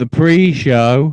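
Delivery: slow, loud and drawn out. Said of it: "I'll say it slowly".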